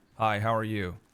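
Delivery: put-on American accent. A streamer tries out an American accent for viewers: American accent. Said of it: "whether I'm any good at American accents".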